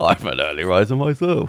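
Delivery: classic spy-film hero character voice. Retelling a film scene's double-entendre line: Roger Moore impression. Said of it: "your Roger Moore impression's quite good".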